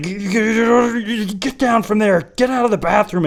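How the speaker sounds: high, slow, rattled delivery. Retelling what the principal said to the kids in the bathroom: imitating a flustered principal. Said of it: "he got really, really flustered".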